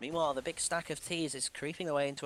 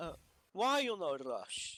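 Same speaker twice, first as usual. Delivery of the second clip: silly, sing-song, put-on fake Russian accent; 3 semitones higher than usual. Speaker reveals the players heard late at night are him: silly fake Russian voice. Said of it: "it's actually me just doing a silly voice".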